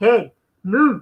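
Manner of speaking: put-on Scottish-accented voice. Retelling a movie scene where the dad mocks his son's head, scottish accent. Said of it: "he'd do it like in his Scottish accent voice".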